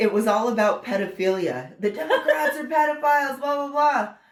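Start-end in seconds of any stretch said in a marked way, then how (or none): 1.8-4.1 put-on, high-pitched, dismissive yelling of blah blah. Retelling what a protester would yell across: imitating a protester yelling. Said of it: "would yell stuff across to us".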